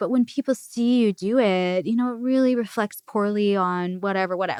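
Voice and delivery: mimicked quiet, calm, reasonable tone. Retelling a movie scene where the husband talks to his wife: imitating a quiet, reasonable tone. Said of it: "all quiet and reasonable".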